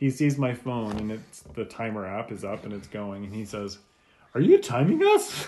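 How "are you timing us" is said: put-on very high, loud, gawky awkward-teen voice. Retelling what the kid at the McDonald's window asked: awkward teenager voice. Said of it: "it was that like awkward like teenager voice".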